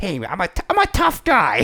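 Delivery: very high, very slow, nasal gangster-style tough-guy whine. Mocking how gangster types talk: imitating a whiny gangster voice. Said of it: "You always have that".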